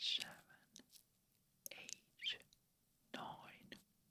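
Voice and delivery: whispering. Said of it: "I'm gonna be whispering like so the numbers".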